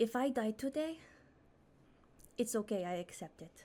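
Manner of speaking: hushed whisper. Whispering in character to the party before a confrontation: whispering. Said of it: "I'm gonna whisper to everyone".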